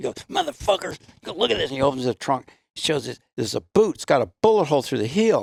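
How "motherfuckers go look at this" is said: very high-pitched, enraged, furious outburst. Retelling how a cop who drove them in reacted: imitating a furious cop. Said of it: "he's all fucking pissed".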